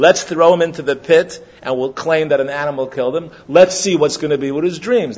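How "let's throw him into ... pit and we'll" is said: plain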